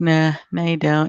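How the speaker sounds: put-on Australian accent. Retelling a friend turning down credit, imitating his Australian accent. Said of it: "in his Australian accent".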